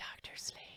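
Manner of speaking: soft, hushed, barely voiced whisper. Showing how hearing a movie title makes one want to say it: whispering. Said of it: "I wanna whisper it".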